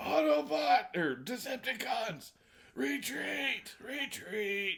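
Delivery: very high, slow, drawn-out call. Retelling a scene, ordering a retreat: imitating Megatron. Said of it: "Megatron's like".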